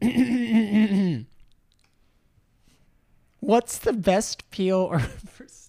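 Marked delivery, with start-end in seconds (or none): 3.4-5.0 slow, loud speech through giggling laughter. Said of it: "I don't know why I'm laughing so much".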